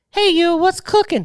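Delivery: very high, squeaked-up put-on voice. Quoting a movie character's first line: Steven Seagal impression. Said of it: "your voice of him is your same as your Italian voice".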